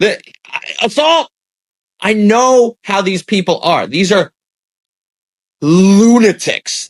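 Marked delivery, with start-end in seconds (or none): 0.0-1.3 small, mild yell, kept restrained, higher pitch. Imagining what a woman would say if touched: imitating someone yelling. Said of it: "she would yell".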